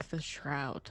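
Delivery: whispering. Leaning into Gristle's face in character to deliver a threat: whisper. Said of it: "And I just wanna whisper".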